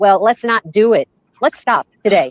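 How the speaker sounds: loud yelling. Speaker talking over others in a group discussion, yelling. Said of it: "I'm sorry, I'm yelling".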